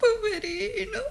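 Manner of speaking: crying, tearful voice. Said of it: "Ma voi piangete".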